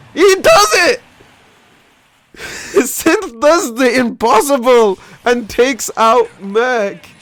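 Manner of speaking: very drawn-out, high cracking voice. A caster calling a player taking out merc, voice breaking. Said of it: "My voice broke there".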